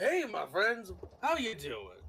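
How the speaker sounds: cheerful, upbeat, friendly voice with swooping pitch. Voicing a character greeting the party: upbeat in-character voice. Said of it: "Just very much more upbeat than he was".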